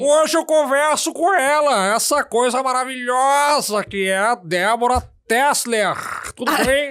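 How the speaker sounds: high, booming, slow talk-show host announcing voice. Opening the interview as asked, imitating Marília Gabriela. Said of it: "o [name] tava imitando a Marília Gabriela".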